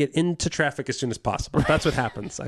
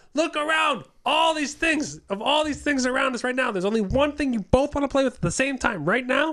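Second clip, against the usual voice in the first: very high, exasperated, frustrated parent scolding tone; 10 semitones higher than usual. Retelling scolding two kids fighting over one toy: imitating frustrated parent talk. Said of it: "frustrated parent talk".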